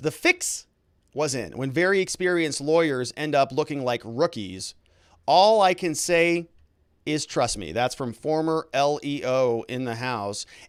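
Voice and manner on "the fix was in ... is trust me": plain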